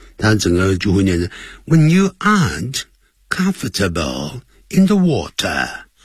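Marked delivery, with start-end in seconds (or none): 1.7-5.7 British accent, comfortable said in four syllables. Teaching British versus American pronunciation, in a British accent. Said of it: "如果你要是念英式的呢，那可能他会念四个音节".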